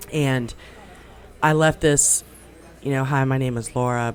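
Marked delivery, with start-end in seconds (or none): 3.0-4.1 put-on hushed soft voice, lower pitch. Recalling recording her voicemail greeting so others won't hear, retelling real low, soft talking. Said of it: "I was talking real low, real soft".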